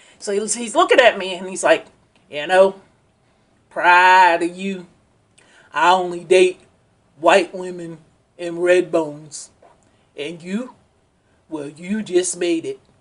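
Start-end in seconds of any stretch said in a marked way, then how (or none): 2.3-12.7 put-on heavy country accent, laid on thick, voice dropped. Speaker imitates what a man said to him, in a heavy country accent. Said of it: "I'm going to just imitate it".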